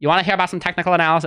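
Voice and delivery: very high, squeaky, put-on technical analyst voice. Demonstrating the voice he refuses to use for technical indicators, voice of a technical-analysis guy. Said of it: "if you want me to sound like someone who's like".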